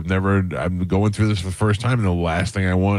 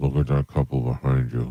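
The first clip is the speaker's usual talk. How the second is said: put-on speech through clenched teeth, lower pitch; 6 semitones lower than usual. Retelling what the wife said in a store, imitating speaking through teeth. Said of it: "Through her teeth".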